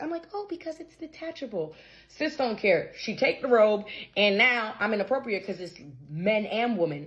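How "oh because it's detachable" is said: sweet, courteous, hushed acted voice, pitched up. Retelling a reply to a woman asking about the robe, retelling using a nice voice. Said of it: "I use my nice voice".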